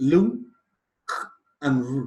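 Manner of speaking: word broken into syllables, one at a time, with pauses. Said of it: "So we are going to count three".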